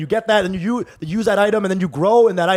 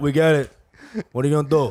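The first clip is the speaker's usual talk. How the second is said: put-on Italian accent, lower pitch; 5 semitones lower than usual. Joking about how they voice an abusive person, in a put-on italian accent. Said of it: "it becomes Italian accent by".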